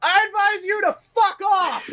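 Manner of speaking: very high, dismissive shouted yell. Telling the others how the ranger reacted, the speaker acts it out: retelling the ranger's yell. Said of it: "the ranger just yells back".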